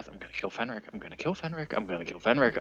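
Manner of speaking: barely audible, very quiet mutter under the breath. Player describing their character's reaction to an awkward moment, muttering under breath. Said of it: "And then I mutter under my breath".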